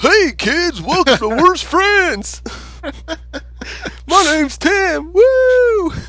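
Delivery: very high, loud, hardcore goofy cartoon voice. Showing a co-host how they might open the show, in a goofy cartoon voice. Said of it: "do a cartoon voice like".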